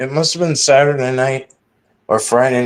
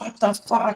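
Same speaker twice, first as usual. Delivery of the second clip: acted scared, defensive, startled, high-pitched yell; 8 semitones higher, 8 dB quieter than usual. Retelling being startled outside at night: retelling own scream. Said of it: "I screamed it".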